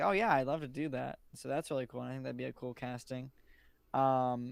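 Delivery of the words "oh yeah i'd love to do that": usual speaking voice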